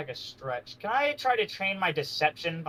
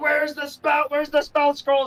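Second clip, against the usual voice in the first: shrieking, shrill scream pitched very high; 10 semitones higher, 4 dB louder than usual. Acting out a character searching a market for a spell scroll: screaming. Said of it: "screaming out".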